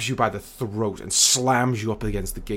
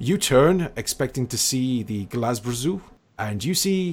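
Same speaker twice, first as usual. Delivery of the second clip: ordinary talk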